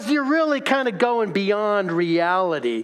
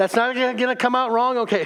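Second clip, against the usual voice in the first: ordinary talk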